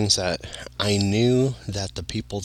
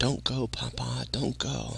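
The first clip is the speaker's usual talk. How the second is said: high, soft distant voice. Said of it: "a distant voice saying".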